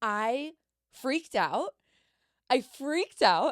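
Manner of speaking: slow, loud, high, emphatic outburst.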